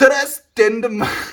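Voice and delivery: put-on very high, loud Irish lilt. Reading aloud a message someone sent, in an Irish accent. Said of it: "I should try and read it in a in an Irish accent".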